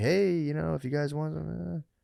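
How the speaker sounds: put-on slow, creaky, high mobster voice. Describing how town officials send a middleman: imitating a local mobster. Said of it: "a local kind of mobster guy to be like".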